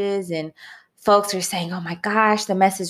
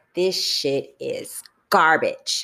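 mock, intense, harsh, blunt judging tone; 4 semitones lower than usual. Retelling what the inner critical voice said about the video: imitating own loud critical inner voice. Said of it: "loud, critical voice said".

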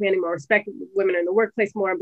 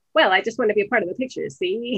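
put-on old-time golden-age Hollywood transatlantic accent. Explaining the affected accent of 1920s to 40s actresses: old-time transatlantic accent. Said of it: "that transatlantic".

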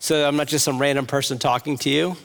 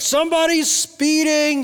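very high-pitched screamed yell; 13 semitones higher than usual. Describing a boy who screams at a speeding car, retelling a scream. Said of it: "He just screamed out".

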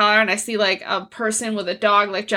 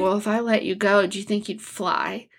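acted creepy delivery; 3 dB quieter than usual. Recounting a movie scene, imitating a character's creepy delivery. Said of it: "he says it so creepily".

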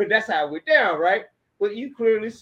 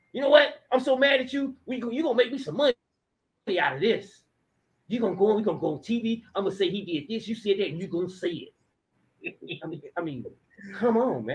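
put-on hustling pimp-style voice; 3 dB quieter than usual. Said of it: "Dante talking like a pimp".

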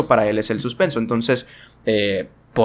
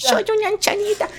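put-on old woman voice, much higher. Describing a film's final scene, the speaker imitates an old woman voice. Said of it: "es la voz de una mujer viejita".

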